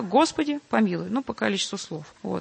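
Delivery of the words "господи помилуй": normal talking voice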